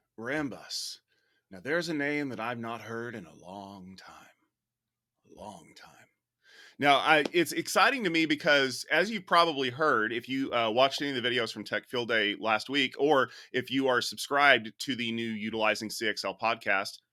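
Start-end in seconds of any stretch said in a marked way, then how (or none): 0.2-6.0 soft, quiet, gentle sage-like mentor voice. Asked by a colleague what you think of a Rambus story, answer with an Obi-Wan Kenobi impersonation. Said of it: "let me do my best Obi-Wan Kenobi impersonation".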